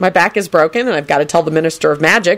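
ordinary delivery

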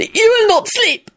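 very high, shrill, furious screaming screech. Narrator reading a character's line to his only companion, screaming. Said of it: "he screamed".

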